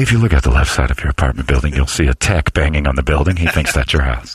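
very low pilot-on-the-intercom announcement voice. Joking about service calls, speaker picks up a listener's pilot remark: pilot announcement voice. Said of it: "Sounds like a pilot".

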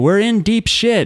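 high-pitched, slow yell.

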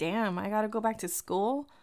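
ordinary delivery

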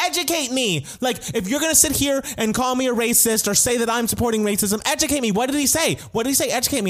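mock near scream. Retelling how Sharon reacted while her castmate stayed calm, retelling her borderline screaming. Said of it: "Sharon is like borderline screaming".

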